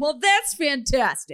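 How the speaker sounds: game show announcer style. Retelling his reply to a man's claims: game show announcer voice. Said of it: "in my best game show announcer voice".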